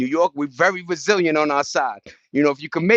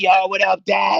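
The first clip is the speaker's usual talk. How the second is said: harsh, rough, creaky voice; 3 semitones higher than usual. Retelling his kid calling him on FaceTime, imitating the kid's harsh voice. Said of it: "Even my kid's voice is harsh".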